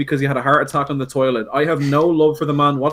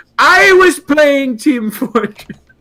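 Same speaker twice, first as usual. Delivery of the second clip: high-pitched, long, drawn-out scream; 11 semitones higher, 6 dB louder than usual. Retelling a friend cutting in: imitating Donald Trump, screaming. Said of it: "sounds like a room full of Trump clones".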